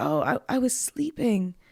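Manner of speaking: mock-groggy, just-woke-up put-on delivery. Retelling a phone call, quoting a woman who was sleeping: imitating a groggy voice. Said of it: "she answers the phone very groggy".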